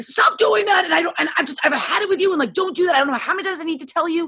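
mock angry yelling. Retelling how he screamed at their four-year-old, retelling an angry scream. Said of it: "He was mad and he was like screamed at Keegan".

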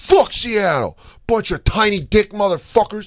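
high-pitched, shouted, taunting heckling yell. Retelling a Niners fan yelling at Seahawks fans in the street, imitating a guy yelling. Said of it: "this guy just starts yelling at Seahawks fans".

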